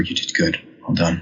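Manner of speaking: soft, close, intimate whisper. Playing a character leaning down to praise a companion: whispering. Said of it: "kinda whisper".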